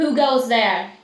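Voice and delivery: loud, calling-out voice. During a game, a player's character calls out to whoever is there, calling out. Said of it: "I'm going to call out".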